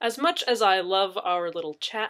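plain

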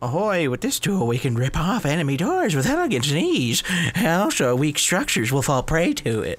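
put-on, high-pitched cartoon character voice. Reading out a tool description, doing a Chum Bucket impression. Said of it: "That's my scum bucket impression".

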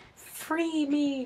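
put-on very high prepubescent child's voice. Imagining a little kid character in a game calling out, high kid voice. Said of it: "their fucking high voice, which I can't do anymore".

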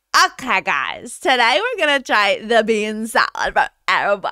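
put-on Los Angeles accent in vlogger style. Describing a TikTok bit trying food at Erewhon: put-on LA accent. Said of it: "I put on this LA accent where I'm like".

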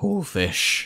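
soft voice, cracking on pool fish. Answering people who ask how it feels to be pool fish, voice crack. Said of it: "A voice crack made that perfect".

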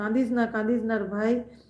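plain

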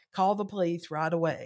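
plain

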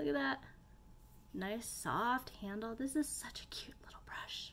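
hushed whisper. Trying a new brush for the first time, speaker talks in a whisper. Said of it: "I don't know why I'm whispering".

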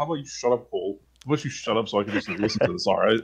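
acted annoyance, irritated snapping tone. Speaker retells how Taz reacted to Cole, retelling an annoyed snap. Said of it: "He's like visibly annoyed by this point".

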